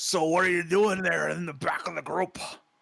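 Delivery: put-on slurred speech. A man comes up to a player at the back of the group, slurring speech. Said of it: "in a slurring kind of speech".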